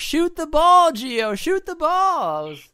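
very high, loud, swooping yell. Recounting watching the match at home, retelling own yell at the tv. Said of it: "I was like yelling at the TV".

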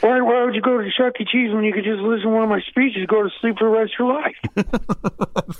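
rambling Delaware accent impression. Doing a rambling impression for a co-host: Joe Biden impression with Delaware accent. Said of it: "Your Biden's getting better".

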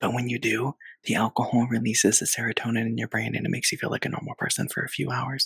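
hushed whisper. A speaker saying something they call very unethical, whispering. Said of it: "Why are you whispering?".

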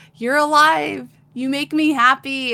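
booming jovial laughing voice. Recapping a story where Adon greets Guts, who is alive, in a booming, jovial Adon voice. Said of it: "he's like booming, laughing, very jovial".

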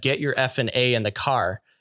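put-on harsh man's voice. Recounting a man overheard while walking to the car, in a retold harsh male voice. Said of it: "this really harsh male voice that just said".

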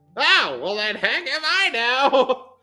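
put-on very high, shrill, loud old granny voice. Retelling Grandma's reply to Julia's news: old grandma voice. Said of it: "That's my old grandma voice".

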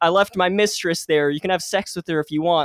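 plain

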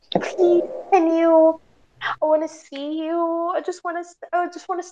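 put-on sweet pleading voice. Retelling a guy's drunk plea to see her: imitating a sweet voice. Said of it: "he was saying this sweet voice".

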